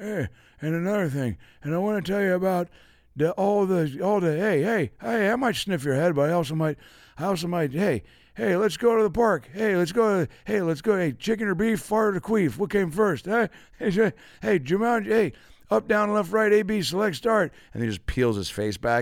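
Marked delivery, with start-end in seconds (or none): 0.0-17.5 very high rambling babble that keeps restarting. Imagining a politician rambling on and on: Joe Biden impression. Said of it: "What if Joe Biden was like".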